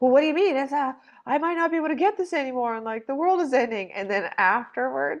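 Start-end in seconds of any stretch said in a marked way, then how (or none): 0.0-3.9 higher-pitched, defensive, self-justifying tone. Telling a story, quoting a shopper stopped over her full cart: imitating a hoarding shopper. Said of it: "And she's just like".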